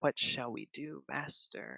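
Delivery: wet, gurgling, very hushed whisper. Narrating a story: a voice behind him asks its master, gurgling whisper. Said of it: "a gurgling voice rises from behind him and whispers".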